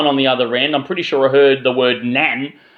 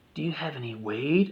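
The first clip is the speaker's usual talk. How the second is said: very quiet, close half-whisper; 13 dB quieter than usual. Retelling what a passenger on the train said: imitating someone half-whispering. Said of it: "whispering in me, into my ear".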